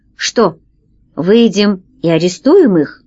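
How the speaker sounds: plain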